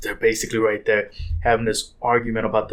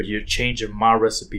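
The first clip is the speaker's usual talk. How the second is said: normal talking voice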